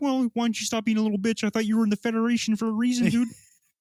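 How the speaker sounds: high-pitched talking-frog character voice. Retelling a visit to a psychologist, the speaker voices the therapist as Kermit the Frog. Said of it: "He's like".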